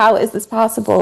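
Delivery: high-pitched screaming. Retelling reacting to videos on the phone: imitating own screaming at phone. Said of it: "screaming at the phone".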